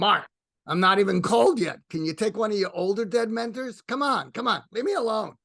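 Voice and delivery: put-on Brooklyn accent. Retelling what a dead mentor said back to him, imitating Larry's Brooklyn accent. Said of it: "in his Brooklyn accent".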